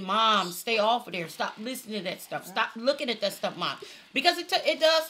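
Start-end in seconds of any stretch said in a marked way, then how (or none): none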